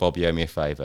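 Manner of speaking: normal talking voice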